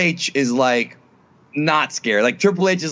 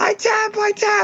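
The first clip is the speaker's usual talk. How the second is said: very high, very slow, drawn-out fake panicked cry. Acting out a wrestler caught in an armbar: Stephanie screaming in fake panic. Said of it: "she screams".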